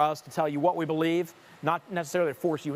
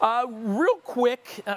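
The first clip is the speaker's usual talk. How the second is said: voice breaking mid-phrase, cracking up high; 8 semitones higher, 4 dB louder than usual. Speaker talking to viewers about RVs, voice cracking. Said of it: "did you hear my voice crack?".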